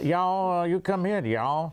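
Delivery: joking, put-on southern US accent. Joking about being from southern new york, southern accent. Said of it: "so I got this southern accent".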